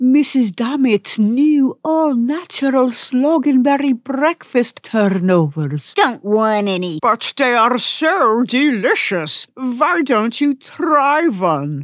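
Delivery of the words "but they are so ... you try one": put-on cartoon granny voice. In a sketch, Grandma speaks to Flea, who keeps refusing; grandmother character voice. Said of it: "Don't you got ears, Grandma?".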